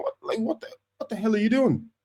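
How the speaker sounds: high, mild mock yell, exasperated. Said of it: "I was even shouting at my T V".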